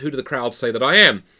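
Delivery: plain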